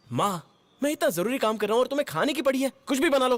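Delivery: angry, irritated and annoyed. Answering his mother's question about fish while busy: angry, irritated. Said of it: "तुझे इतना गुस्सा क्यों आ रहा है?".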